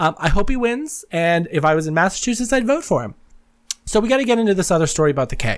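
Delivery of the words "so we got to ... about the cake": fast, wired, rattled-off chatter. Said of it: "I am talking so fast right now because I am so wired".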